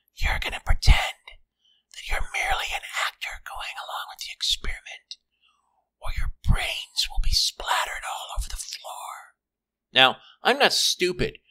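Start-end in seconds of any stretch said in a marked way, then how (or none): 0.2-9.4 tiny, very close whisper right in the ear. Reading a story where someone threatens the narrator at gunpoint: tiny whispering voice. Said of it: "a tiny voice whisper in my ear".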